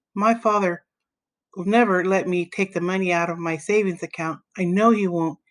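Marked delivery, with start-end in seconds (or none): none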